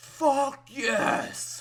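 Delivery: a high-pitched, loud, triumphant yell. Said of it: "and I yelled".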